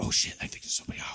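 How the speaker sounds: hushed whisper. Voicing people behind doors who hear someone outside: whispering. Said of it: "we got you here whispering".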